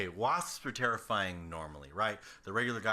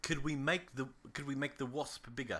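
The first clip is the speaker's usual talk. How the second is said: accurate put-on Australian accent; 5 semitones higher, 4 dB quieter than usual. Acting out people asking to make the wasp bigger: put-on Australian accent. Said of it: "an impression of a Japanese person accurately emulating an Australian accent".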